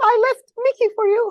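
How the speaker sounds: squeaky, very high and loud cartoon mouse voice. Quoting a tweet while practicing a Mickey voice. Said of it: "I'm doing Mickey".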